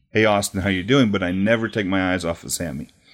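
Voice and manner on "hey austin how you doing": put-on, hokey, corny delivery. Retelling greeting a crowd before a promo: imitating a hokey greeting.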